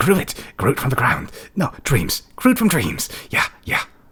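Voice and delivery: high, loud, rat-like creature voice. The game master voices a figure who just fell down the stairs, rat-like voice. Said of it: "really like almost rat-like voice".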